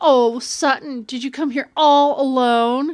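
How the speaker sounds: mock patronizing, extremely condescending talking-down tone. Quoting what one girl said to another at homecoming, mock-condescending tone. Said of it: "In the most condescending tone of voice possible".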